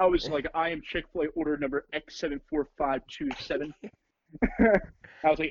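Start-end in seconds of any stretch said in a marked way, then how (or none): none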